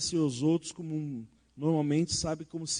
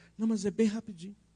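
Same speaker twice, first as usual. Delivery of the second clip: meek, deferential tone with pitched-up insistence; 5 semitones higher than usual. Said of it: "Então fala baixinho".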